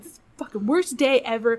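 play-acted angry, fed-up grumbling voice. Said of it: "I'm so angry".

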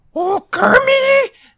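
very high, loud, belted angry outburst. Describing the two sides of Miss Piggy's voice, showing the angry one. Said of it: "which is the angry".

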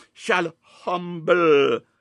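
humble stressed, drawn out slow and loud.

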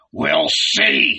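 gruff, rough, creaky grumbling growl. Narrator reading a character's reply as he shrugs: growling. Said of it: "he growled".

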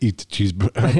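put-on Austrian-sounding accent. Joking with another speaker, try a bad Russian accent that comes out like Schwarzenegger. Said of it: "This sounds like Schwarzenegger".

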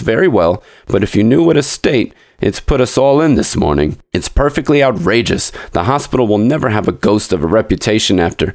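ordinary delivery

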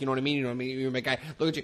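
rattled off at high speed. Imitating a favorite actor's fast-talking charm: imitating Vince Vaughn fast talking. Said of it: "he's like fast talking".

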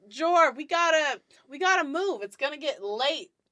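loud yell, stretched out. Voicing a character who calls back to the group to move: yelling back to the group. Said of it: "she yells back to you guys".

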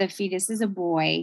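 ordinary delivery

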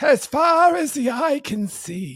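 put-on elderly grandfather character voice. One speaker repeats a phrase in a VeggieTales grandpa grape voice. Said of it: "the grandpa grape from Veggie Tales".

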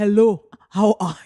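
loud, put-on, badly done South African accent. Imagining podcasting from Johannesburg, the speaker tries a bad South African accent. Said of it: "I can't do an accent".

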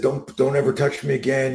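put-on yelling with a rising, high voice. Retelling a fight by the school lockers: imitating someone yelling. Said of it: "and he starts yelling at him".

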